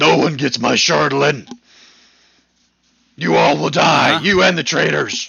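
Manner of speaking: very loud, raw, shrill villainous scream. Voicing a villain who screams at the party: villain screaming. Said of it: "you hear him scream".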